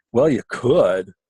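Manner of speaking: mock patronizing, dismissive professional intonation. Retelling a doctor's reply to a request for conservative treatment: imitating the doctor's exact intonation. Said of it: "I'm capturing the intonation exactly as she says".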